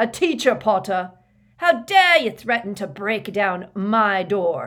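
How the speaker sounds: loud, high, furious outraged roar. Reading a story aloud, a teacher confronting a student at his door: roaring angrily. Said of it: "he roared at Harry".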